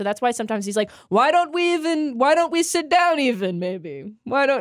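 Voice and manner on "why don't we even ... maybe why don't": put-on, pitched-up, funny high character voice. Retelling how a cartoon character talks: imitating Zoidberg's voice. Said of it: "everything about that voice just makes me laugh".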